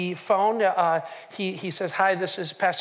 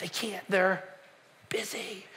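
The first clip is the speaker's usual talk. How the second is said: imitated whisper, quieter; 8 dB quieter than usual. Retelling a child answering the phone: imitating a whisper. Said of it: "the kid's whispering all the way through".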